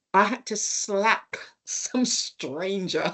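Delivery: words broken up by laughing. Recalling an overnight prayer meeting he attended, laughing while talking. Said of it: "Sorry, I'm laughing".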